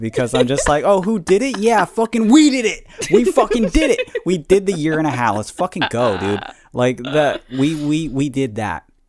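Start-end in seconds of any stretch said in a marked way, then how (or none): 0.8-6.4 loud, cocky, boastful macho barking, swooping. Celebrating being good at being apart: mock macho barking. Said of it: "puffing my chest out and barking a lot".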